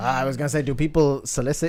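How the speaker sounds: put-on French accent in English. Asking another player a question in character: french accent. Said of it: "why am I speaking French?".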